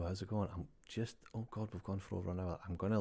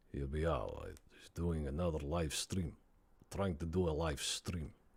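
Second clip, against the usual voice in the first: put-on Russian accent; 3 semitones lower than usual. Streamer on a live stream tries out a stereotypical Russian accent. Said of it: "A Russian accent".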